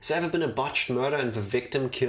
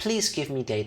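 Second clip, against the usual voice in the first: adorable, cute put-on voice. Doing Kibo's voice as best you can, adorable Kibo voice. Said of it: "I feel this like kind of like adorableness to it".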